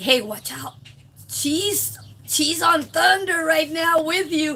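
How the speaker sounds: put-on whisper. Retelling a warning given to someone as he came in: retelling a whisper. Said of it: "I kinda whispered to him".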